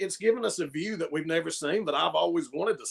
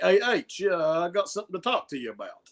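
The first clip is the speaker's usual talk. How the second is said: put-on sudden shift into an Italian-sounding accent; 2 semitones higher than usual. Speaker recalls backstage moments, quoting Randy Orton talking to H: quoting Randy Orton in Italian accent. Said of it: "I don't know why I sounded Italian".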